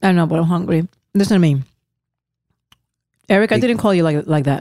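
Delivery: talking with mouth full. Speaking to listeners and another host while eating, talking with mouth full. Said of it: "They just hear food in your mouth right now".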